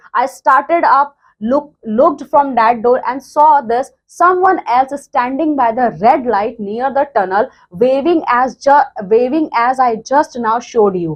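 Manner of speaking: ordinary talk, nothing marked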